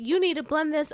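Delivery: blunt, rude voice. Imagining how a rude customer really asked: imitating a rude demand. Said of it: "I can imagine her".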